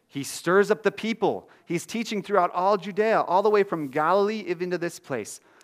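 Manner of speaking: urgent, insistent crowd shouting, loud and high.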